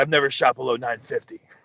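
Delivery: fake haughty, arrogant tone. Retelling a laughing answer from Ken Climo: imitating Ken Climo's arrogant tone. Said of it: "you know how he has that little arrogant".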